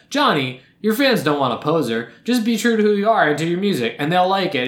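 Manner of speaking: usual speaking voice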